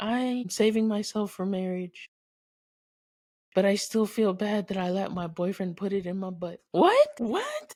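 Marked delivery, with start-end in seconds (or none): 0.0-6.6 woman's voice. Imagining a woman confessing to the priest: imitating a woman confessing. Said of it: "it's just some female just like".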